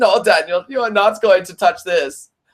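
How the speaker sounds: put-on German accent in a car voice. Speaker voices their car speaking to Daniel, in the car's accent. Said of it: "I'll do my car's accent".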